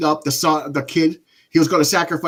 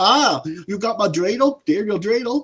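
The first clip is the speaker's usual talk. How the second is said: fake German accent, slow, high; 5 semitones higher than usual. Describing a man in a disliked movie, imitating a german accent. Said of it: "talking like he was German".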